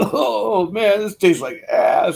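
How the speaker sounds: put-on surfer dude voice, way up in pitch. Speaker retells his buddy's remark after a bong hit, imitating a surfer dude. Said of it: "talks like a surfer dude".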